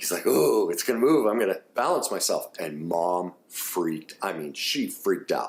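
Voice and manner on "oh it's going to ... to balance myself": put-on eager, thrilled, excited little boy voice. Speaker retells a six-year-old boy on an airport train, imitating an excited young boy. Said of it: "he's all excited".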